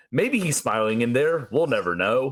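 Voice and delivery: ordinary talk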